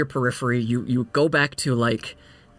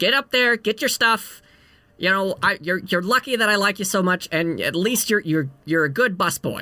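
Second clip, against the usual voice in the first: high-pitched female gnome voice; 5 semitones higher than usual. Voicing the gnome woman who owns the inn, scolding a late worker: voicing a gnome innkeeper. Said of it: "this gnome woman".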